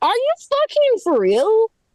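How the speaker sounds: high, slow, drawn-out exasperated disbelief. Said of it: "you really just wanna be like".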